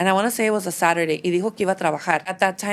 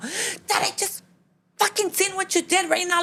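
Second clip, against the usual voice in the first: mock angry, furious outburst, voice pitched very high; 12 semitones higher than usual. Retelling confronting her dad at the door: imitating herself angrily confronting. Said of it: "I'm gonna let him have it".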